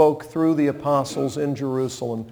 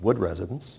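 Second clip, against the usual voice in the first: soft, calm, reassuring tone; 7 semitones lower, 6 dB quieter than usual. Preacher's kid answering the family phone, calm, reassuring phone greeting. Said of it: "It's always a calm, reassuring tone".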